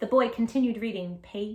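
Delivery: ordinary delivery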